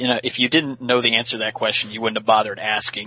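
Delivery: normal talking voice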